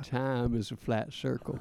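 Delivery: slow, unhurried, each word stretched out. Doing an impression for the other to guess: Matthew McConaughey impression.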